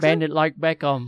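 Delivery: put-on Cockney accent. Saying a line for friends: put-on Cockney accent. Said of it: "What is that accent?".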